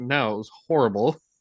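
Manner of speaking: usual speaking voice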